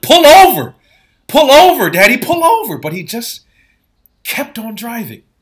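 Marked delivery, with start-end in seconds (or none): 0.0-2.8 very loud, high, desperate pleading scream. Retelling a storm drive, begging a father to stop: imitating screaming at someone. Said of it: "I'm screaming at him. I'm yelling".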